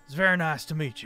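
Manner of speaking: put-on laid-on-thick Southern accent. Voicing a character greeting the Dragonborn: heavy Southern Endeavor accent. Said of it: "with a very heavily Endeavor accent".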